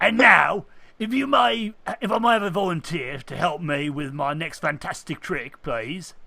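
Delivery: put-on Cockney accent with showman patter delivery. Voicing a magician asking the crowd for a volunteer: attempted Cockney accent. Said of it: "you should speak Cockney".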